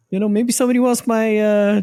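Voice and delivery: cocky rock-star voice.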